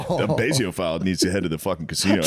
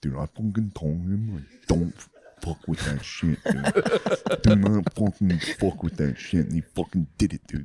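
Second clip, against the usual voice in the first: whisper that comes out far too loud and carrying; 4 semitones lower than usual. Imitating a friend trying to whisper about someone upstairs: imitating Bees' loud whisper. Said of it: "if he tries to be quiet, he just goes straight deaf".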